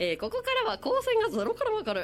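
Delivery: deliberately odd, wildly high-pitched intonation.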